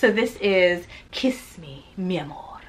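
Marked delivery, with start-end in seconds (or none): 1.1-2.6 slow, grandly dramatic, theatrical delivery. Announcing a romance novel's title aloud, in a dramatic title reading. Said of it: "I feel like you have to say it like that, you know, because it's it's dramatic".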